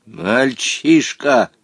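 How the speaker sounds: scornful, contemptuous, tossed-off single word. Answering a boy's boast, contemptuous. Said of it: "презрительно бросил Омар Юсуф".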